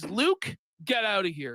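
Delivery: stern, domineering, aggressive tone. Retelling how a man ordered Luke to leave, imitating a serious aggressive order. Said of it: "pretty serious and aggressive from Jer".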